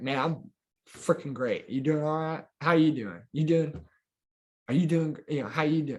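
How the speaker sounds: lively, cheerful, upbeat, energetic and joyful. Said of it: "be energetic and joyful".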